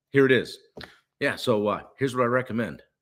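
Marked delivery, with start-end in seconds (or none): 2.0-2.7 certain, confident, grounded tone, no hesitation. Coaching on delivering a recommendation: flat, confident, grounded tone. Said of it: "That's a certain tone. No hesitation".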